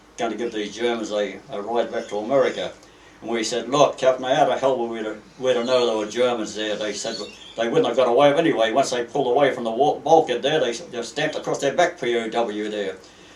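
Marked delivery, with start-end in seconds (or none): none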